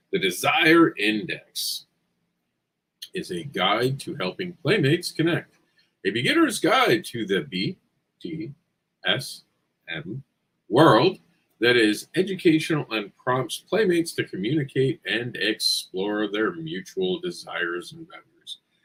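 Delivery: slow, deliberate, carefully paced reading aloud. Presenting their project, speaker reads its title and description aloud, said slower. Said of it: "I had to say it slower".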